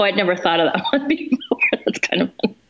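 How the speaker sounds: laughing to tears with swooping pitch. Joking about her sidekick, laughing to tears. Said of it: "I'm making myself cry".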